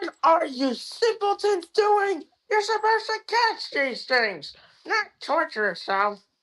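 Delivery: very high cartoon voice with big pitch swoops. Retelling a cartoon scene with a jellyfish: Squidward impression. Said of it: "That's my best Squidward impression".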